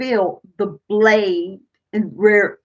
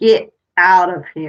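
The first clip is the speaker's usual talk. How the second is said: mock furious, stern, angry barked delivery; 4 dB louder than usual. Retelling what a recorder in a haunted duplex caught: imitating an angry voice. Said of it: "it was an angry voice saying".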